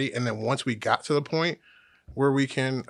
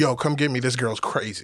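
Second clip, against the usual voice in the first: put-on frantic, pleading voice. Retelling a phone call from a man begging to be picked up, imitating someone frantic. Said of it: "He's kind of frantic".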